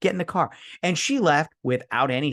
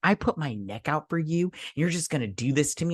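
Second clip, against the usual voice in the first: mock-hurt, upset tone; 3 semitones higher than usual. Recapping a film scene, quoting a character at her car: imitating an upset accusation. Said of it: "when she gets to her car, she's like".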